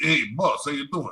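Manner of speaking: Italian mobster voice. Recalling a big mafia boss's right-hand man, doing his stereotypical Italian mafia voice. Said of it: "I remember what he sounded like because he was very".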